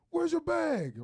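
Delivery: demanding, high, loud and barked.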